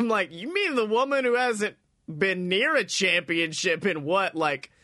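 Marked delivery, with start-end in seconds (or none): none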